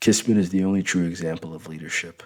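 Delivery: plain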